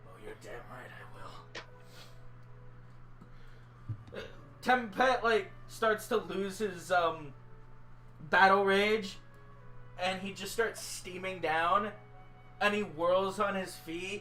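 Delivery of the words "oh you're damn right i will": fast muttered whisper under the breath. Told the others will get it themselves, he answers, muttering under his breath. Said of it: "he just mutters under his breath".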